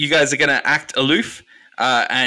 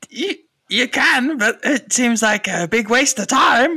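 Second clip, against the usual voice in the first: squeaky, very high goblin centaur creature voice; 11 semitones higher than usual. Answering the group's plan in character, goblin centaur voice. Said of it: "I've got to remember my goblin centaur voice".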